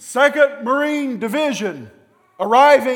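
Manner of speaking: full-voiced, very high, very loud scream. Ringing the bell to announce a division arriving: loud commanding shout. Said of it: "with my loudest command voice, scream out over the top of the celebration".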